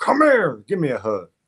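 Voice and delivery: loud, forceful, pushy and aggressive delivery. Imagining meeting Dean, a self-described big hugger acts out greeting him: mock-aggressive hug invitation. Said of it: "You sound so aggressive".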